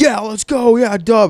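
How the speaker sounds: fired-up, high, hyped-up cheering yell. Imagining the moment the player gets thrown out, acting out screaming and yelling. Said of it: "I'm screaming and yelling".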